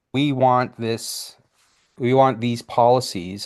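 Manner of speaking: usual speaking voice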